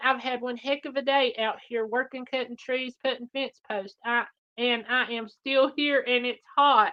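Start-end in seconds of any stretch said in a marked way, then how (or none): none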